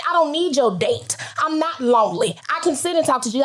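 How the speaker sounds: plain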